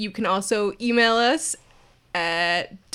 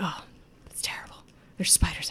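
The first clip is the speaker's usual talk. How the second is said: muttering, mumbling under breath, much quieter; 3 semitones lower, 10 dB quieter than usual. A game narrator voices the gnome's brother, who ignores the player: muttering to himself. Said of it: "He just keeps kind of muttering to himself".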